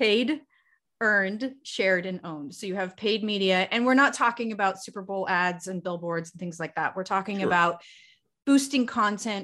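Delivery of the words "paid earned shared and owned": drawn out, slow, deliberate, each word spaced. Repeating a list for listeners after being asked: slowly. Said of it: "say it again slowly".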